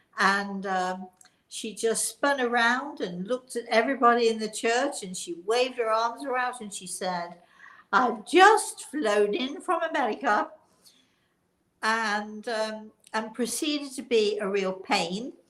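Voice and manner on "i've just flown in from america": put-on high-pitched, very posh upper-crust British accent. Act out a woman addressing everybody in the church, in a put-on very posh british accent. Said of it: "a very sort of posh accent".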